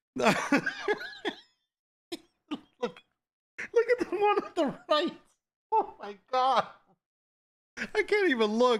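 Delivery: talking through laughter. Looking at the one on the right, laughing while talking. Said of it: "I can't look without laughing".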